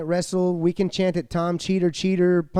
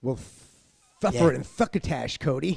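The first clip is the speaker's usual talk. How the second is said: put-on lisp, lower pitched and quieter; 4 semitones lower, 4 dB quieter than usual. Mocking an opponent's lisp to his face: mocking Cody's lisp. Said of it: "he's got a lisp".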